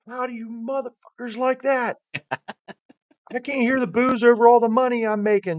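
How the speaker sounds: very high, screamed, rattled-off yell. Acting out what he did when he got out of the car, imitating someone yelling. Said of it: "He was yelling".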